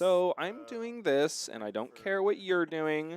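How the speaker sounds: easygoing, pleased tone, high and drawn out. Commenting on a player's turn, imitating Evan's feeling-good tone. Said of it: "I love this tone of voice from Evan".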